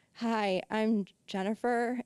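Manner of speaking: very slow, drowsy, sedated drawl. Recalling being told to talk slowly on her podcast, very slow, like on muscle relaxers. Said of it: "you should talk slowly ... I sounded like I was like on muscle relaxers".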